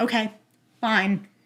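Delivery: mock flat, deadpan delivery. Retelling his reply after she said she had to leave: imitating a deadpan reply.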